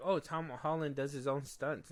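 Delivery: ordinary delivery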